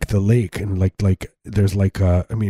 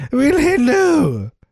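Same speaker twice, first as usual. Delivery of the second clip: much higher, slightly British ending; 3 dB louder than usual. Asked for Mark Twain saying his own name, a speaker does a Mark Twain impersonation. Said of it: "It gets slightly British at the end".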